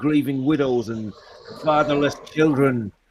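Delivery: normal talking voice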